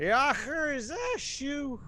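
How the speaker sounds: put-on sloshed, slow, slurring drunk voice, pitched way up. Game master voicing a whiskey-reeking man calling out to a player, drunken slur. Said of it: "he slurs out to you".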